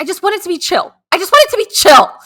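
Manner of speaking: very high, very loud, shrill shouting. Retelling talking to people about the wedding: imitating herself yelling. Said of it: "yelling at people".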